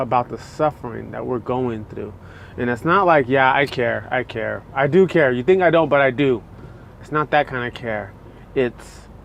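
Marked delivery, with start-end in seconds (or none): none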